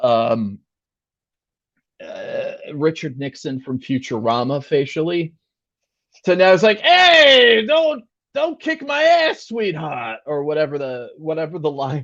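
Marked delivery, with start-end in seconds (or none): 6.8-10.2 very high, swooping character voice, opening drawn out. Imitating a new film's version of the Penguin: Penguin impression. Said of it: "this interpretation of the Penguin has gone from".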